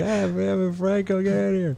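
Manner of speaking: very high, hoarse, rough holler. Joking about how one would yell at someone: imitating someone yelling. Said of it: "I'm yelling like".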